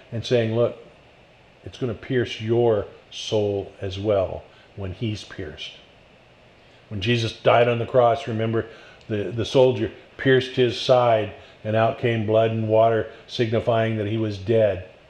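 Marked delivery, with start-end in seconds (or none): 0.5-5.7 hushed voice, lower and quieter. Retelling a scene where a man leans closer to a woman, in a lowered, quieter voice. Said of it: "lowering his voice, being a little quieter".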